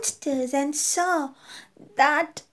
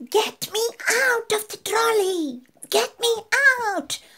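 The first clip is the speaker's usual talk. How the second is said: put-on yelled toddler-style, high-pitched shout; 6 semitones higher than usual. Reading a story aloud, the girl wants out of the trolley: shouting. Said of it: "in the end I shouted".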